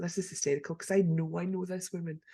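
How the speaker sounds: plain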